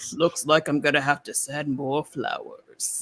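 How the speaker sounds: tough-guy western voice. Quoting a line from a favorite Godzilla movie: John Wayne voice. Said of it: "I love his John Wayne voice".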